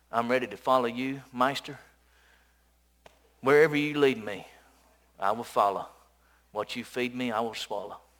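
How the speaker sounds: low, put-on rural hillbilly accent. Speaker retelling what a man who wants to follow him says: hillbilly voice. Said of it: "he says it like, you know, he's a hillbilly".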